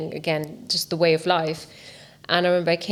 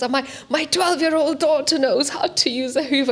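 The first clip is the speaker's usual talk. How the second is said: put-on Polish accent, much higher, slower; 9 semitones higher, 3 dB louder than usual. Retelling what a man told them, imitating a Polish accent. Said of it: "he was Polish and he had this accent".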